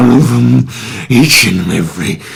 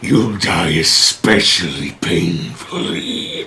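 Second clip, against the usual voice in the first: low, deranged, menacing, gloating dragon growl; 4 semitones lower, 4 dB quieter than usual. Thordak rears back after poisonous gas hits his face; growling Thordak dragon voice. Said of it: "Loved everything about it especially Matt's portrayal of a Lunatic, deranged Dragon. / you see the gargantuan form of [name]. / growling voice of [name] as he begins to scan the vicinity. / you can he".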